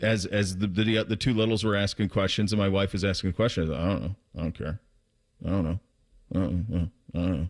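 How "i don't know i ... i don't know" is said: put-on checked-out, disengaged, dismissive tone, repeated. Retelling dinner, imitating him to his face: imitating someone who won't engage. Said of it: "So I just started acting like him".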